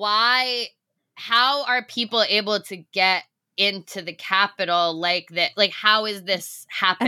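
ordinary delivery

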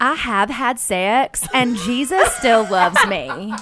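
put-on Southern accent from Nashville. Asked by a co-host for an impression, doing Hannah's accent. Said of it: "Can we get a little impression?".

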